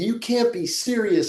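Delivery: high, drawn-out, put-on hot-headed screaming. Retelling a tennis hothead's famous outburst: imitating John McEnroe screaming. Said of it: "when he's screaming".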